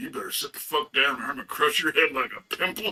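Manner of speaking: put-on threatening, menacing male voice. Retelling how a guy jumped up to defend the speaker: imitating a guy threatening. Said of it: "jumped up, like".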